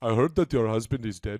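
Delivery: put-on Indian accent. Offering mock condolences on a dead husband: put-on Indian accent. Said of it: "that sounded too Indian".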